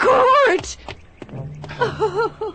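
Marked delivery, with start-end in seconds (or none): 1.8-2.5 high-pitched, tearful crying voice. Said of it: "Don't cry, [name]".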